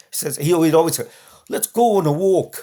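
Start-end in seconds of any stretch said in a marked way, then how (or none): 1.4-2.6 put-on British accent, pitched up. Retelling how Gary woke the speaker at four, imitating Gary's British accent. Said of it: "with his British accent".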